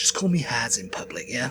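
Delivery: put-on casual young upper-class British male voice. Imitating Prince Harry asking to be called Has in public: imitating Prince Harry. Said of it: "he's like".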